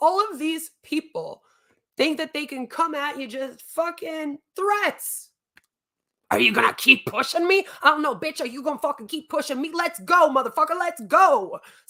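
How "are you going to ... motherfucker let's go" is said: fast, aggressive, crazy, tough street-style delivery.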